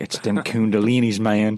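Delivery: put-on Southern accent. Imitating an older conspiracy theorist guy, in a put-on southern accent. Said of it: "we imitate like that conspiracy theorist, like older conspiracy theorist guy with a southern accent".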